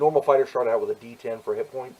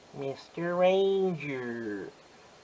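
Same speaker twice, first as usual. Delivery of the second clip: put-on character voice, drawing out "Ranger"; 4 semitones higher, 3 dB quieter than usual. Saying a Ranger nickname, doing Boo Boo voice. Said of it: "That's my best Boo Boo impersonation".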